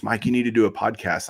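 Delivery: normal talking voice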